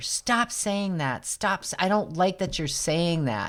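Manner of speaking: put-on irritated, annoyed, increasingly mad tone. Retelling a friend's reply to a joke: imitating someone getting mad. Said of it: "her other girlfriend was getting mad at her".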